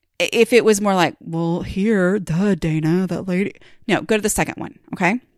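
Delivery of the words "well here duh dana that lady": mock-condescending, snooty voice, much slower. Speaker showing listeners her voice for people who think they're better, mock-condescending voice. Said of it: "I have voices for people who think they're better than us".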